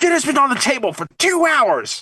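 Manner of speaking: very high-pitched, upset, complaining tone. Retelling a movie scene where the wife complains: imitating an upset wife. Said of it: "and she's upset".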